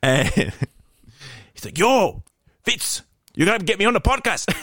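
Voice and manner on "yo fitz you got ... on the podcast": bad put-on Welsh accent, much higher pitch. Retelling what a Welsh friend said on a call, in a butchered Welsh accent. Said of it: "I'm butchering his accent".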